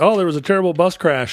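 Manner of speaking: unconvincing fake American accent with overdone R's. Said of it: "slow, careful way people do when they're trying to sound American".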